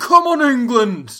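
shrill, very loud, high-pitched, full-throated yell. Retelling a commentator's moment after a try: imitating someone shouting. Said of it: "he just shouts".

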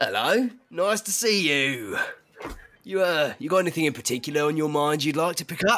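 big, burly orc voice. Game master voices the orc shopkeeper greeting the players, orc shopkeeper voice. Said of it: "Behind the counter is stood a tall, very burly, grey-skinned orc who has very ornate tusks, one of which is bejeweled. It has a little dangly talisman hanging from it. And he turns to you".

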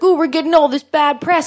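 high, irritated, aggrieved, angry grumbling. Retelling what the festival organizer said about bad press: imitating someone being mad. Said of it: "He was all mad".

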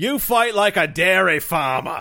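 slow, high-pitched bellowing voice. Acting out a sword-fight insult as Vile Pirate number one. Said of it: "so you're Vile Pirate number one".

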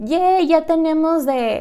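super excited, happy cheer, said slowly.

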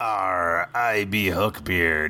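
put-on pirate accent. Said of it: "and I only do one pirate accent".

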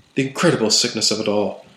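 plain

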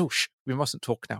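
imitated conspiratorial voice. Recounting a show, imitating the owl's aside in a conspiratorial tone. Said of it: "the way he kind of conspiratorially goes".

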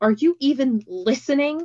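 insistent, pressing, demanding tone. Confronting a woman who is not really listening, demanding. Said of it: "demanded Nico".

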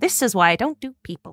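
put out, grumbling mutter to herself. As he leans on the sword stuck in the ground, she is muttering under her breath. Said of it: "she just mutters under her breath".

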